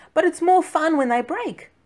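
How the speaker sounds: very high-pitched voice. Watching his egg in the pan, answering a suggestion, protesting. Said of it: "Cicero protested".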